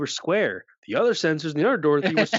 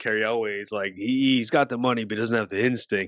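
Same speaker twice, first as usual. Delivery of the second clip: ordinary talk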